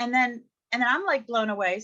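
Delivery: ordinary delivery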